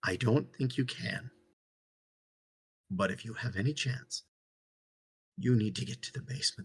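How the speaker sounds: very quiet, hushed, breathy whisper. Voicing a father head to head with his child, warning them: quiet whisper. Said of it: "he quietly whispers back".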